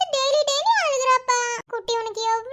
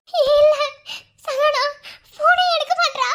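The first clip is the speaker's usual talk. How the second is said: frightened, louder; 2 semitones higher, 5 dB louder than usual. Telling the other speaker someone will not answer the phone: scared. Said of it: "எனக்கு பயமா இருக்கு".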